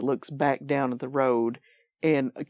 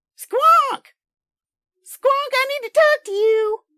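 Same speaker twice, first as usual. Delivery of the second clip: shrill, piercing halfling woman voice, much higher, louder, faster; 9 dB louder than usual. Narrating a scene, the storyteller voices a familiar woman calling to Squonk: shrill halfling woman's voice. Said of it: "the source of this shrill halfling woman's voice".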